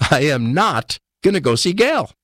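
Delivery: agitated, rising pitch. Retelling own refusal to the voice: imitating own agitated refusal. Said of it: "not so calmly".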